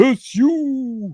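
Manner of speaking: word stretched out, pitched very high. After explaining the bit, doing it once more, Garak impression. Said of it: "that's my impression of um, Garak".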